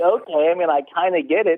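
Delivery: normal talking voice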